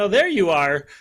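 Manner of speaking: bright, high, gleeful voice, very full of air. Imitating an athlete greeting another racer: imitating Lindsay's high-pitched gleeful voice. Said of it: "this high-pitched, gleeful, very full of air voice saying".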